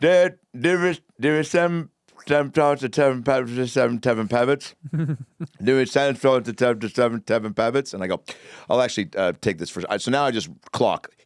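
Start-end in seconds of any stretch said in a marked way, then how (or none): 0.0-7.9 put-on heavily drunk slurring voice, higher pitch. Retelling what blackout-drunk Sean said when he raised his hand: imitating Sean's drunk slurring. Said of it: "blackout drunk".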